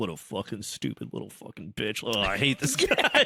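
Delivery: put-on hateful, venomous tone with swooping pitch. Acting out a character's private thoughts about his brother: imitating Hadrian's hateful inner thoughts. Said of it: "in his head, he's like".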